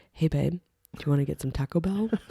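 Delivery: mock whispering. Retelling a video where a wife asks her husband: imitating someone whispering. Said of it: "whispering to her husband about".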